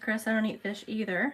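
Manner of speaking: ordinary talk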